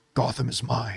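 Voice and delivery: deep, hushed caped-hero voice, very low and soft. Saying he would play Batman for free, the speaker shows off his Batman voice. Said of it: "he said in his Batman voice".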